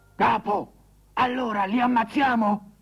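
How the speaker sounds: muffled, stifled, smothered voice. A voice from inside a merchant's oil jar asks its chief a question, muffled voice. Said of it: "udì una voce soffocata".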